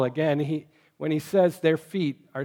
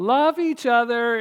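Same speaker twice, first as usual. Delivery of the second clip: wavering, shaky, unconfident, pitched-up voice; 8 semitones higher than usual. Recalling how she would make her declaration, imitating a shaky unconfident voice. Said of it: "in this shaky voice without much confidence".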